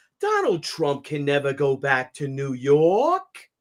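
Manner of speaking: put-on slow, swooping thick New York accent, "York" dragged out. Retelling what Cuomo said about Trump: Andrew Cuomo's heavy New York accent. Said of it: "with that fucking uber New York accent".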